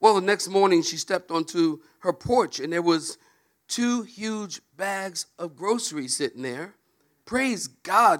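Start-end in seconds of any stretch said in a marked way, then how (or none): 7.2-8.2 acted-out, high, exclaimed crying out. Telling a joke, voicing the old lady finding groceries: acting out crying out. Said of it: "she cried out".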